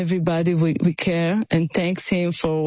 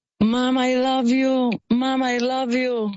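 put-on frightened boy's voice, high and yelled; 7 semitones higher than usual. A mother recounts what her younger son yelled, retelling his yell. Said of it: "he just yelled".

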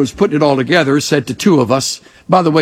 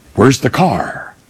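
put-on stern male voice; 2 semitones lower than usual. Retelling how a stiff, formal guest stepped off: imitating a stern man. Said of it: "real stern face".

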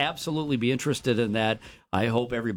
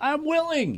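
mock very high, shrill, called-out yell. Retelling calling after a man walking away from the table, retelling a yell. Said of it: "I yelled".

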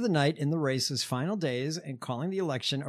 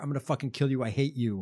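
put-on mobster voice. Describing someone who turns on everybody, act it out in a mobster voice. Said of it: "It's that ridiculous, like, mobster".

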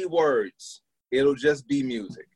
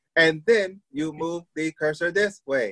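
automated, home-assistant smart-speaker voice; 3 semitones higher than usual. Describing tutorial videos to another speaker: imitating the Alexa voice. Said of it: "you hear the ones with the Alexa voice".

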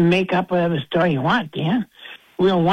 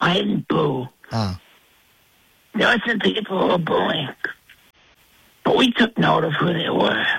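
hoarse, croaky, lost voice. Speaker who says they lost their voice answers a co-host, hoarse, lost voice. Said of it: "it's painful just listening to you".

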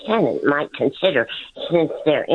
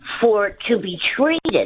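plain

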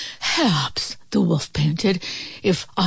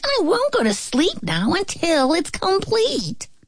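high-pitched, squeaking little piglet voice; 9 semitones higher than usual. Narrator reading a story gives the little pig's line: squeaky little pig voice. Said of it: "the little pig squeaked".

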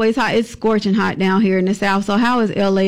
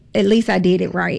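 normal talking voice

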